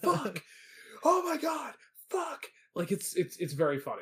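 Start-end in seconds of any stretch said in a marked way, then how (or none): 0.0-2.4 very high, slow, drawn-out panic. Retelling a movie scene where police sirens appear: imitating Martin Short losing it. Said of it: "he just loses his absolute shit".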